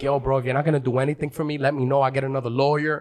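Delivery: put-on frantic, panicky, rushed. Retelling what they said to their lawyer in court: retelling own panicked words. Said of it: "I'm fucking panicking".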